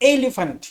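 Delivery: elephant with first syllable el stressed. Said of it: "the accent is on the first syllable".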